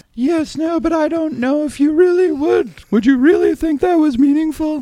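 put-on very high woman's voice. Doing all the voices, the speaker plays Susan Wolf: put-on woman voice as Susan Wolf. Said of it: "That's my only woman voice".

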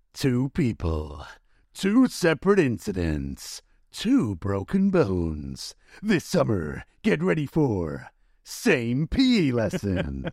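deep, swooping, dramatic movie-trailer narrator voice. Asked to read a line like a movie tagline: dramatic movie-trailer voice. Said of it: "you read that in your movie voice".

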